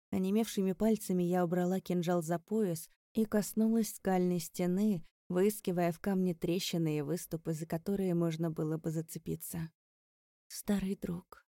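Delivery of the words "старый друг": shaky, trembling whisper. Narrator touching a cliff wall speaks to it, trembling whisper. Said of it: "дрожащим голосом прошептала я".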